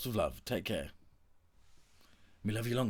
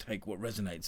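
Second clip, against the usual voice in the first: normal talking voice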